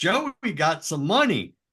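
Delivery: high, excited, hollered shout. Quoting a man shouting about Joey McGuire's money: retelling a shout. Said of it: "And he shouts".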